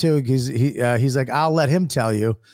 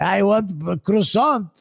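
put-on old French guy voice; 7 semitones higher than usual. Joking with others, slipping into an old French man voice. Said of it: "I really did become an old French guy".

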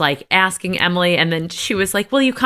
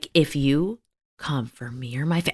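whispered, lower and quieter; 6 semitones lower, 6 dB quieter than usual. Retelling Heather's threat to Shannon: imitating Heather's whisper. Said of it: "she said it like a whisper".

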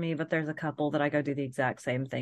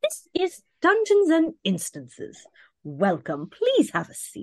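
put-on very high, upper-class old English accent; 14 semitones higher, 7 dB louder than usual. Introducing a parody tabletop game to the players, posh old English accent. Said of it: "in a very posh old English accent".

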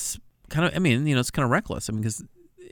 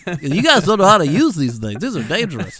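very loud, high-pitched, lecturing scold; 6 semitones higher, 8 dB louder than usual. Imitating the other speaker scolding the group over knives: impression of the co-host scolding. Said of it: "That's spot on".

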